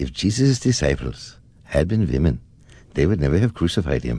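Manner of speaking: imitated Indian accent. Quoting a yogi he once listened to, in an Indian accent. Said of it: "as I listened to him in this Indian accent".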